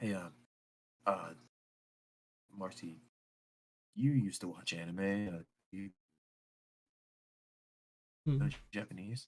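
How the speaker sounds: speaking in a whisper. Voicing a character who whispers to Marcy, whispering. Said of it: "He kind of whispers like".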